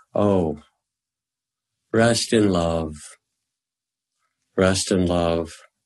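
slow, unhurried, relaxed, eased-out delivery. Retelling what a man in pain said as his face relaxed, said very softly. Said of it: "he said so softly".

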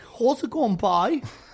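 imitated Cork accent. Showing Sam how to do a Cork accent, in a Cork accent. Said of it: "That's perfect, Cork".

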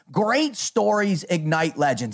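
usual speaking voice

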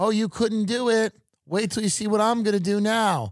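put-on high half-screamed yell, mild. Retelling a caller screaming at him on the phone: imitating someone screaming. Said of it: "screaming at me going".

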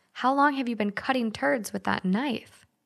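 ordinary delivery

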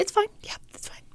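high, breathy whisper with forced reassuring tone. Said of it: "in a really high-pitched voice".

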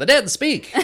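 put-on very high old-time 1950s news reporter voice. Trying different ways to say a line, in a 1950s news reporter voice. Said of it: "I like to say it as, like, a 1950s reporter".

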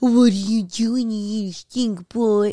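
put-on baby-talk voice, as if to a baby. Discussing baby talk, the speaker shows how they talk to their dog: baby talk. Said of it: "sorry for the baby talk".

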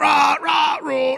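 roaring in pain.

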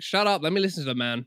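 ordinary delivery

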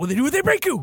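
high movie-trailer announcer reading. Quoting a line from a movie trailer: Forest Whitaker line reading. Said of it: "that line reading Forrest Whitaker has where he's like".

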